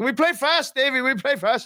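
very high, eager, excited burst of speech. Act out Dubsy answering you when told to slow down, imitating Dubsy's fast, excited talk. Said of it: "He talks so fast and he gets so excited".

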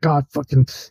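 mumbling under the breath. Voicing a short-circuiting character mumbling under his breath: mumbling under his breath. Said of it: "all you can hear is under his breath".

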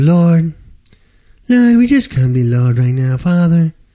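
high, loud, mock-pious prayer voice. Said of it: "here's how their prayer goes".

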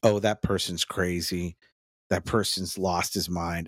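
ordinary talk, nothing marked

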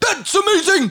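play-acted, very high, dramatic, over-the-top amazed tone. Imitating a four-year-old nephew saying the word he just learned: over-the-top amazed tone. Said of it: "he would change his tone".

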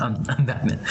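ordinary talk

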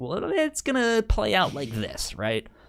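very high storyteller voice with wide swinging pitch. Imagining someone asked to make new comics answering: George R. R. Martin voice. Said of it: "in his best George R R Martin's like".

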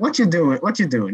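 put-on Italian mom voice. Picturing how his Italian mother reacted to his plans, in an Italian mom voice. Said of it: "I could kind of see the Italian mom going".

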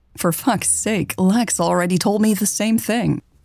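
ordinary talk

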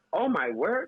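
motherly mom voice, exclaiming. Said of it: "My mom will be like".

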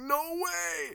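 very high, thrilled, excited exclamation. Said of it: "I was like".

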